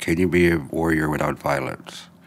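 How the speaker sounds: ordinary delivery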